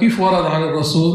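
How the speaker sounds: normal talking voice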